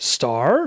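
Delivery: star said with questioning upward rise. Repeating how someone said star while teasing Terry Rozier: rising pitch on star. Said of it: "You said it with a question mark".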